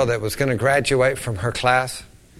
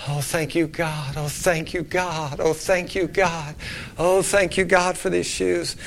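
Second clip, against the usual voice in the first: put-on crying, quivering, tearful wailing sobs; 4 dB quieter than usual. Retelling a girl who thanks god through tears: imitating a girl wailing and crying. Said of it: "she's wailing. She's crying. She's quivering".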